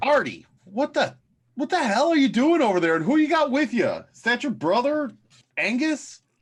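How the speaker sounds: shrill, very high call-out yell. Calling out to Artie over there in character: Ox yelling. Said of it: "Ox will yell out".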